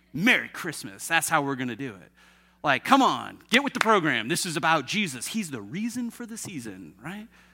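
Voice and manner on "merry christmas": mock-aggressive, combative tone, much lower pitch. Describing how people use the greeting, the speaker does a mock-combative Merry Christmas. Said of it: "In a tone of voice that could easily be followed with, take that".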